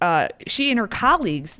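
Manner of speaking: ordinary talk, nothing marked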